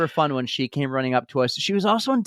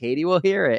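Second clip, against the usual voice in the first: normal talking voice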